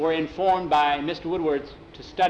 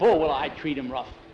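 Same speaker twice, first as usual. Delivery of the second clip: plain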